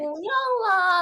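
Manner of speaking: very slow, put-on, cutesy baby voice. Speaker doing an impression of a little kid, imitating a little kid. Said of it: "我只是在学娃娃".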